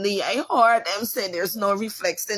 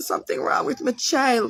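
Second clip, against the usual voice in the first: play-acted crying, tearful begging voice; 4 semitones higher than usual. Retelling begging the doctor to help the sick child: retelling a tearful plea. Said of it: "I begged them at the end".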